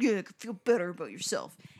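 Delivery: put-on angry man voice. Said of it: "as he was leaving, he was like".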